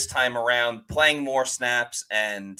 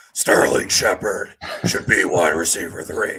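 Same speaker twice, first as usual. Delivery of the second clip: deep, low, gravelly put-on voice; 6 semitones lower, 3 dB louder than usual. Making a football roster pick as Batman says it, Batman voice. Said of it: "in a Batman voice".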